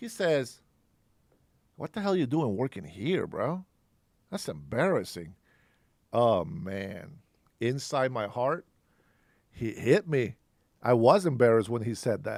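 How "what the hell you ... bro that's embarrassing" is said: mock contemptuous, disgusted tone. Retelling what a friend said on seeing him work at Target: imitating a disgusted friend. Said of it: "he looks at Target, like, in disgust".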